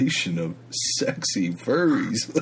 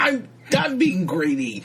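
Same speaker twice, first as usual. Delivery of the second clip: put-on raspy comedian voice, higher pitch; 10 semitones higher, 4 dB louder than usual. Asked by the other speaker for an impression, voicing the parrot: Gilbert impression. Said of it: "you wanna do a, a Gilbert impression".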